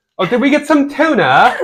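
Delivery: put-on mimicked British accent. Imitating what she says at the store, imitating her British accent. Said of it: "She'll say things at the store like".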